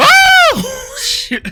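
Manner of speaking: very high-pitched, very loud scream. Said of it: "I screamed exactly like SpongeBob".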